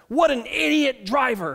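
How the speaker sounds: put-on firm, emphatic child's voice. Retelling what a nine-year-old son said from the back row: imitating Riker's emphatic words. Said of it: "says these emphatic words".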